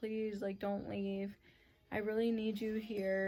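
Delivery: put-on tearful, crying, begging voice. Retelling begging someone not to leave: retelling a crying plea. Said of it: "I was crying so hard".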